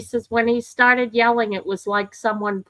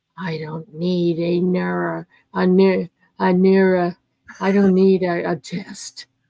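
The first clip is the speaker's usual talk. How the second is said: put-on man's voice, pitched lower; 3 semitones lower than usual. Imitating Joe speaking into the microphone: impression of Joe. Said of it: "I'll do my impression of Joe".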